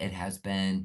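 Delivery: ordinary talk, nothing marked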